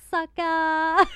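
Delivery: put-on playful sassy shout, very high, very loud, drawn-out. Retelling a bartender's catchphrase: imitating Kellyanne, sassy. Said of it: "sassy. She's always like".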